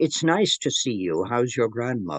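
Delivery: thick, heavy, laid-on Irish brogue. Retelling a strange little man's greeting to a couple: heavy Irish accent. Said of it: "He had a very heavy Irish accent".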